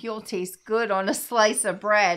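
ordinary delivery

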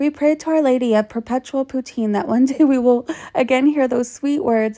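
ordinary talk, nothing marked

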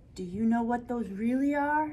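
plain, simple delivery, read aloud evenly. A woman standing beside the narrator at a kitchen window, asked quietly. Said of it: "she asked quietly".

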